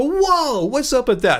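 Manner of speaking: emphatic, animated stress with big pitch jump on whoa. Describing how they vary pitch, unlike monotone talkers: emphatic, varied pitch on whoa. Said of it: "I'll emphasize words like this".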